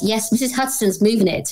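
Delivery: ordinary talk, nothing marked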